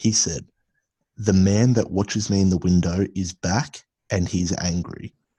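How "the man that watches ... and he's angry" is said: ordinary talk, nothing marked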